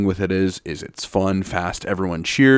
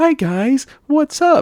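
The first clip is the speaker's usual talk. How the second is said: put-on sweet, girly, high-pitched voice; 4 dB louder than usual. Contrasting an actress with her character; Stephanie Beatriz voice. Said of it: "She's super high pitched voice, very girly".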